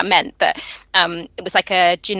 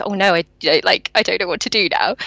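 mock worried, anxious-sounding tone. Retelling a doctor's reaction to the missing sample, imitating someone worried. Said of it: "he looks at us all worried and goes".

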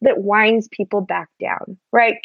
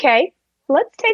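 mock kindergarten-teacher tone, higher; 5 semitones higher than usual. Mocking how people talk when the data may be lost, mimicking kindergarten-teacher tone. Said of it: "settle into this tone of voice that's like they're at a kindergarten".

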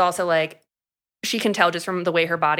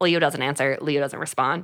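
plain

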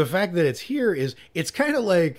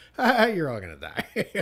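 muttered quietly under the breath, aside. Speaker recalls a favourite Jaws moment, Richard Dreyfuss muttering under breath. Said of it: "Like under his breath".

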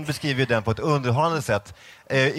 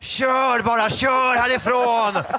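put-on scream, much higher; 11 semitones higher, 4 dB louder than usual. Speaker recounts Amanda seeing the house from the car; retelling a scream. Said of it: "då skrek hon".

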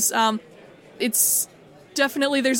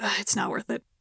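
tired, bored, jaded voice, quieter; 6 dB quieter than usual. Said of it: "then they shrug and they're like".

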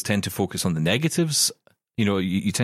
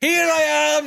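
mock yell, very high-pitched, stagey and unnatural; 4 dB louder than usual. Retelling how sitcom characters walked in over audience screams: imitating someone yelling. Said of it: "would be yelling".

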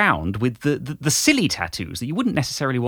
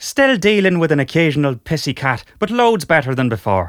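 loud, deliberately put-on Irish accent; 3 semitones higher, 5 dB louder than usual. Reading the next sentence of the letter: Irish accent.

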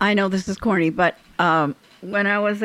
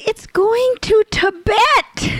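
put-on very high, drawn-out, furious screaming-fit shriek; 14 semitones higher, 5 dB louder than usual. Retelling a road manager's screaming fit on a plane: imitating a screaming fit. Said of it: "having a total meltdown, screaming fit".

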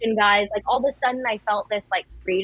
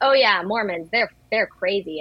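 mock-sarcastic tone, slower. Speaker retells a man's reply during their conversation, retelling a sarcastic remark. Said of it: "I could sense that he was being sarcastic".

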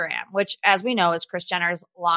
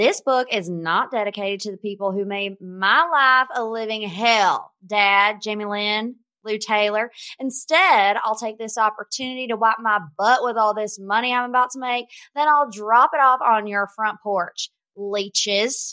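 put-on Southern accent. Relaying how a woman imagined the lines would go: southern accent impression. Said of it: "my best impersonation of a Southern accent".

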